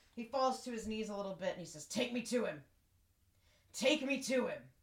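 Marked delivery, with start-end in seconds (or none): 1.9-4.6 rough, rasping, gravelly orc voice. Narrator voicing an orc who falls to his knees: gravelly orc voice. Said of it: "It's just that gravelly voice".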